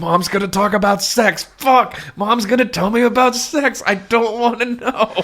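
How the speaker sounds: put-on terrified dread, very high, through clenched teeth. Voicing Amanda hearing her mom talk about sex: terrified Amanda, through gritted teeth. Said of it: "gritting her teeth".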